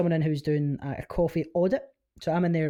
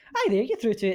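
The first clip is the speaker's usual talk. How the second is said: mock, high, over-the-top chirpy voice; 5 semitones higher than usual. Retelling how they answer phone calls for a living: imitating own over-the-top chirpy phone voice. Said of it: "it's like over the top chirpy".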